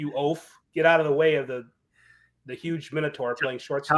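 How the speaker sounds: ordinary delivery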